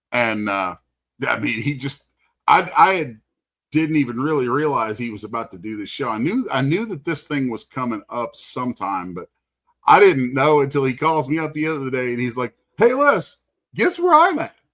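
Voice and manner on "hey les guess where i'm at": very high, loud outgoing voice. Retelling a phone call from Charles, imitating Charles. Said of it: "You know how he talks and everything".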